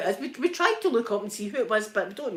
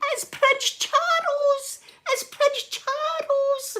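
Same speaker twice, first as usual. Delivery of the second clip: very high, slow, stretched-out shriek. Retelling spotting a decked-out man with a sword from the car, retelling own screaming. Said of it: "I'm in the car and I'm screaming".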